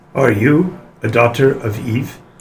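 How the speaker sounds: eerie, unsettling, creepy male voice. Voicing a figure asking the players a question: creepy man's voice. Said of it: "very creepily in a man's voice".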